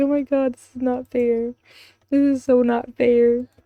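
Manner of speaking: sobbing, self-pitying, whiny, tearful crying. Watching an animation, speaker voices a sad girl at her locker, mock crying. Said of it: "She's gonna be crying her locker like".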